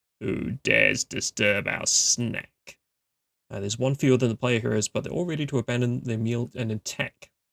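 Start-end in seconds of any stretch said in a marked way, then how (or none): 0.2-2.8 very slow, rasping wolf growl. Narrating the wolf pack leader speaking to the heroes, raspy growling voice. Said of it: "the leader growls in a raspy voice".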